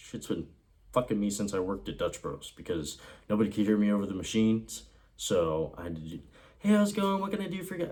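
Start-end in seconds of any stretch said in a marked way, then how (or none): 6.6-7.9 very high, pushed-up customer-service voice. Greeting customers over loud machines at Dutch Bros in a much higher voice. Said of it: "make my voice higher".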